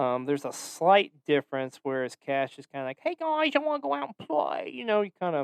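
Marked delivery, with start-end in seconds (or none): 3.0-4.7 put-on very high, joyful, excited little kid voice. A speaker demonstrates the voice made for the character Cash: childlike joyful Cash voice. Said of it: "something just like childlike and joyful".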